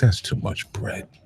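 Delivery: hushed, soft scolding tone.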